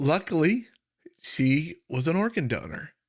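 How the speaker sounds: voice catching, choked up, holding back tears. Telling of a young cousin declared brain dead, holding back tears. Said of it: "trying not to get emotional".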